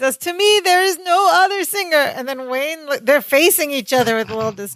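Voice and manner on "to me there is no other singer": high, adoring, acted-out superfan scream. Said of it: "He's yelling".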